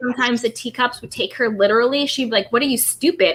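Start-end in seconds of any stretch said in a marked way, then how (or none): 2.5-3.3 sarcastic, teasing, mocking, tongue-in-cheek tone. Imitating a commenter snapping at people who took her literally: imitating a sarcastic tone. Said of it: "And it's that same tone".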